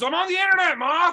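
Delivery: put-on angry yelling. Acting out a son yelling at his mom for walking in: Roy yelling at his mom. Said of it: "Roy's gonna yell at her immediately".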